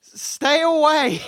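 very high, dazed and shaken shell-shocked yell. The human not covered in gore yells again at the party: shell-shocked yell. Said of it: "In a very shell-shocked voice".

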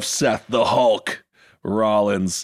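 slow, drawn-out wrestling announcer call. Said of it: "That's the only wrestling voice I know".

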